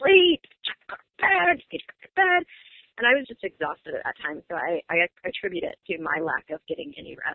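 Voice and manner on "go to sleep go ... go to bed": mock shrill yelling, very high and loud. Retelling losing patience with a son who would not nap: imitating own past yelling. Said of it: "I would yell about".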